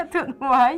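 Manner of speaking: becoming emotional. Recalling how much being understood meant, getting upset. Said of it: "I'm getting upset".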